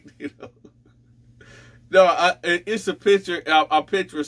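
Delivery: words broken up by laughter throughout. Apologizing to the audience while picturing something funny, laughing while talking. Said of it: "I'm sorry, y'all, for laughing".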